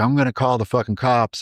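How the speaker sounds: put-on yelling. Recounting what a woman holding his daughter yelled at him; retelling a yell. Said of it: "and she's yelling".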